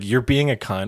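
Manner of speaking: ordinary talk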